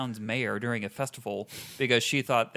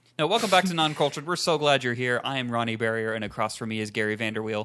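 ordinary delivery

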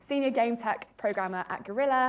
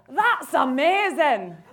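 put-on really poor Glaswegian accent, loud and high; 6 semitones higher, 7 dB louder than usual. Imitating dad's reaction to a game trailer: bad Glaswegian accent. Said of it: "That was really bad. That sounded like Shrek".

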